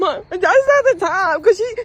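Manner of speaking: put-on high, slow crying boy voice.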